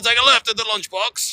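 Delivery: put-on Manchester accent with very high pitch. Retelling what a man said while giving directions, in a Manchester accent. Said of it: "maybe it was a Manchester accent".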